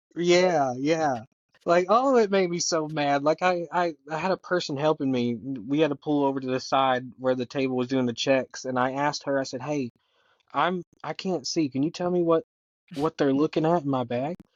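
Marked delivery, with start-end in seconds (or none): 9.6-14.4 soft whispering voice. Retelling asking a helper what they were checking in the bag: retelling a whisper. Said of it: "I whispered to her".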